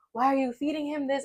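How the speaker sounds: acted, high, frantic, alarmed screaming. Retelling a moment with the co-parent over ice cream: imitating herself screaming. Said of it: "screaming at him".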